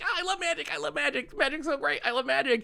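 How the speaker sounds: super frantic gushing, pitched way up high. Imitating a preview show presenter's enthusiasm: frantic high Marrow voice. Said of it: "super frantic high Marrow voice".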